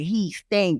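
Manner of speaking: plain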